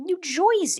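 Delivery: very high New Jersey accent, Jersey said as Joysey. Listing American regional accents and suddenly remembering New Jersey, in a New Jersey accent. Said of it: "I forgot about Jersey".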